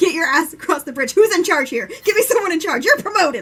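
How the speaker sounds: loud, high barking yell. Retelling how Kaladin yells at the officers: imitating Kaladin yelling orders. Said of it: "just yelling at all of them".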